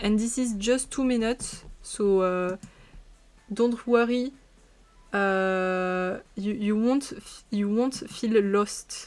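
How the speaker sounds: very bad, thick French accent, drawn-out "uh". Reassuring Quentin and the audience while speaking English, with a very terrible French accent. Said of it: "with a very terrible French accent".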